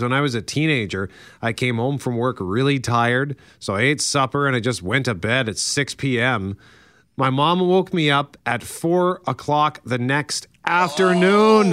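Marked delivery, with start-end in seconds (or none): none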